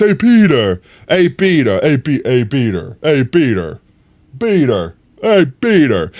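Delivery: swooping, swinging cartoon-character voice. Retelling how someone in a video said the line: Family Guy Peter voice. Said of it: "the Family Guy Peter's voice".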